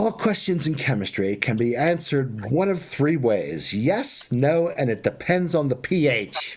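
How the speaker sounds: put-on British accent, lecturing tone. Quoting a former chemistry professor's saying, in a British accent. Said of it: "in a British accent".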